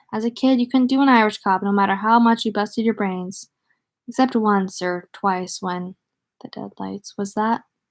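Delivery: ordinary delivery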